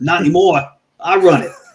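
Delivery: loud, put-on New York accent. Retelling a phone call with a man who hung up, imitating a new york accent. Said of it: "it sounded like he was from New York".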